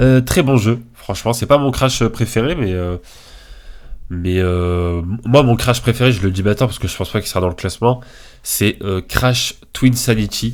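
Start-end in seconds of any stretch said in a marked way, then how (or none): 9.0-10.6 English-accented speech. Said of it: "avec mon superbe accent".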